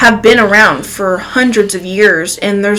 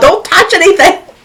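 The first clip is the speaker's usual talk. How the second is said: acted-out very high-pitched hollering; 9 semitones higher, 4 dB louder than usual. Retelling a woman in the next restroom stall warning her child, imitating her hollering. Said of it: "she's hollering".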